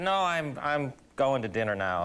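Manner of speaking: ordinary talk, nothing marked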